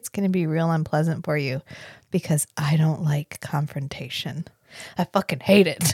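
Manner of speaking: put-on looming, close-up, menacing, threatening tone. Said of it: "very close personal space tone".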